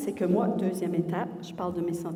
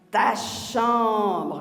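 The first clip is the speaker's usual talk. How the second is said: loud, exasperated, with anger rising and starting to boil; 2 semitones higher, 7 dB louder than usual. Showing how anger comes through in tone of voice, demonstrating rising anger. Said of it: "Vous le sentez, hein, que, je, que je commence à, la moutarde commence à monter, là?".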